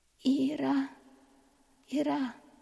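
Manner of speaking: high, broken, halting voice through moans. Doa, in pain, grips the narrator's hand and calls the narrator's name, moaning, broken. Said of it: "Suaranya bercampur dengan rintihannya, memanggil namaku dengan terputus-putus".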